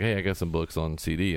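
ordinary talk

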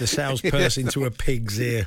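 ordinary delivery

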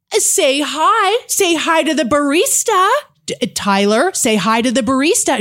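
very slow, showy calling-out. Retelling a cafe scene, a mother urging her toddler: imitating a woman yelling. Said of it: "She's yelling it".

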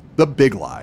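"the" stressed and punched, with falling end.

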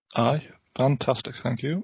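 slow delivery with sarcasm all through the tone. Answering the host asking how the chaps are: sarcastic tone. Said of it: "The sarcasm tone".

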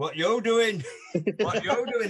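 put-on broad, strong Yorkshire accent, laid on thick. Retelling a man opening the door on the speaker, broad yorkshire accent. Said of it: "In this fit Yorkshire accent".

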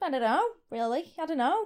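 slight put-on Australian accent. Imitating a partner's past answer, australian accent. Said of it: "why am I kind of Australian?".

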